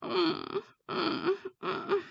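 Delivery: over-the-top high moans. Speaker shows what not to do when talking to someone; exaggerated moaning. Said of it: "You don't need to be moaning, right? Like this".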